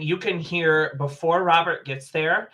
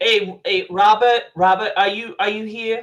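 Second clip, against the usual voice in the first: put-on New Jersey accent, pitched up; 5 semitones higher than usual. Retelling what a man says over the radio, in a jersey accent. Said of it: "I'm gonna officially cancel that that Jersey accent".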